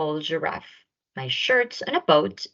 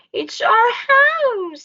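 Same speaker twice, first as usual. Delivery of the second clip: very high, loud, squeaky little mouse voice; 5 dB louder than usual. Reading a story aloud, the mother mouse answers George in a squeaky mouse voice. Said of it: "squeaked the mother mouse".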